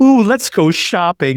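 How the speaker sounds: high, drawn-out, bubbling, barely contained eager excitement. Imitating a tv character who can barely contain herself: imitating barely contained excitement. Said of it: "She's so excited".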